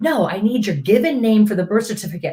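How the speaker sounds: put-on aggravated, annoyed voice. Retelling a phone call about a birth certificate name: imitating an aggravated caller. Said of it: "she got very aggravated with me".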